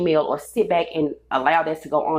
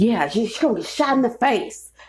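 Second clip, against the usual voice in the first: put-on disgruntled, angry, pissed-off old man voice; 6 semitones higher than usual. Retelling what a disgruntled older guy said: imitating an angry old man. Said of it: "sound like an angry ass old person".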